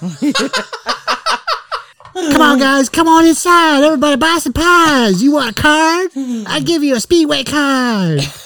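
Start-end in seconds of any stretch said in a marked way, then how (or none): 2.1-8.2 very high, put-on sales-pitch voice. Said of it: "in a high-pitched voice".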